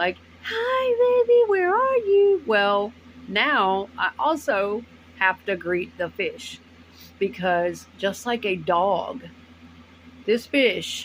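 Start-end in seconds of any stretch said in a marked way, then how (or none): 0.4-2.4 put-on squeaky, very high-pitched baby voice. Showing how she greets her chihuahua after work, very high-pitched voice. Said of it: "in a very high pitched voice".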